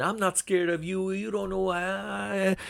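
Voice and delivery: very high shouted yell, "why" stretched out. Retelling how a fighter confronted another in the ring: imitating someone yelling. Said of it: "he just starts yelling at Shakur Stevenson".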